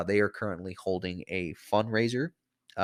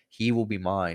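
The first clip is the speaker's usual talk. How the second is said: normal talking voice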